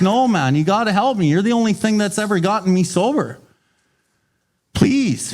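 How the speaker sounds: mock pleading, begging tone. Retelling how Roland pleaded with the doctor for help: imitating begging. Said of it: "he begs the doctor".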